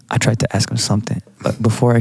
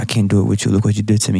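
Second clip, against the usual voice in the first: usual speaking voice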